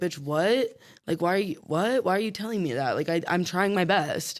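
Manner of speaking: acted-out, flustered, panicky, frantic disbelief. Retelling a scene where a client freaks out at her facialist: imitating someone freaking out. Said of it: "kinda starts to freak out and she's like".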